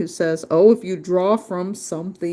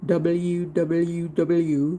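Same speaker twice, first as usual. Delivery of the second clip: put-on Indian accent on the letter W. Saying the letters W W W aloud as a joke: put-on Indian accent. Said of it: "did I sound like an Indian?".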